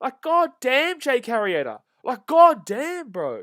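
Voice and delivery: shrill, loud, drawn-out, frustrated, angry yell. Watching the team's pitcher walk another batter on stream: angry. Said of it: "I'm getting angry this whole stream".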